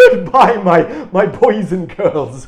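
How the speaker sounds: loud, high, booming festive character voice. Co-host insists on a goodbye in this voice: Santa voice. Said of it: "say goodbye in a Santa voice".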